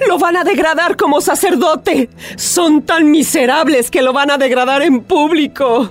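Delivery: words pushed out through tears, crying. Antonia calls to Miguel and, when he asks what's wrong, answers crying. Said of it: "Pero no llores".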